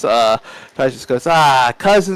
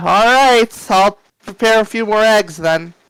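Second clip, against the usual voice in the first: put-on high old woman's voice, calling out; 8 semitones higher than usual. Speaker recounts an old woman calling back from the kitchen, in an old woman's voice. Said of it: "the old woman's voice just kind of calls back like".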